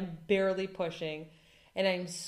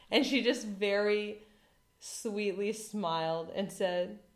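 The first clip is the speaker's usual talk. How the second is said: normal talking voice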